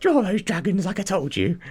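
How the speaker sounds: very high, bossy mother voice. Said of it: "That's my mum. She definitely sounds like that".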